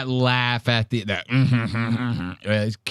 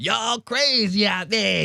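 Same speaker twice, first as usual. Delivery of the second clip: loud, drawn-out stage voice, hyped up; 9 semitones higher than usual. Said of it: "his normal shit where he goes".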